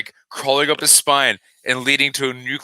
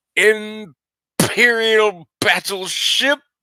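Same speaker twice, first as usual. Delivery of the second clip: raised pitch, every letter clearly enunciated; 8 semitones higher than usual. Showing how good an actor he is, Christopher Plummer impression, enunciating every letter. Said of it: "he enunciates every letter".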